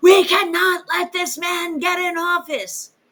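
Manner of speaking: yelling at top of lungs, high-pitched scream. Retelling a radio host's words while imitating someone screaming. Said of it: "screaming at the top of his lungs".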